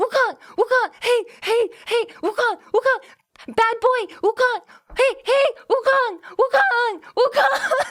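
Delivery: put-on loud, high shouted yell with thick Chinese accent. Retelling a man chasing his dog around, imitating a yell in thick Chinese accent. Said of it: "yelling in a in a thick Chinese accent".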